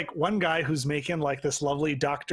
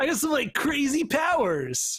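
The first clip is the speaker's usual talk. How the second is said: very high, swooping surfer-dude voice; 10 semitones higher than usual. Describing a superhero as an everyman, he voices him in a surfer voice. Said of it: "I don't know why I'm doing like a surfer voice".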